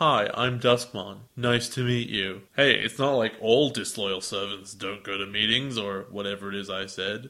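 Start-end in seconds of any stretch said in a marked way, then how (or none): 0.0-2.4 mock excessively polite tone. Mocking a villain's English dub voice as way too nice: imitating Duskmon's too-nice dub voice. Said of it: "is way too nice".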